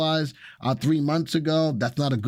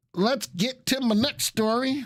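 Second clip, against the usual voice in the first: fake American Southern accent, pitched up; 9 semitones higher than usual. Speaker moving on to the next story, southern accent. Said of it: "That's my Southern accent".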